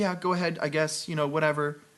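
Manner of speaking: mock sulky, needy, petty, grudging tone. Retelling a scene with a bad review, mocking Mary Jane as needy. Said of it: "she's so needy and so shitty".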